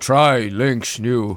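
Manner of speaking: deep, low, dim-sounding caveman voice. Pitching a mock infomercial product: caveman voice like Horrible Histories. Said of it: "you're sounding more like the cavemen from Horrible Histories".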